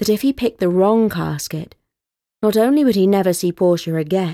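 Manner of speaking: ordinary delivery, nothing marked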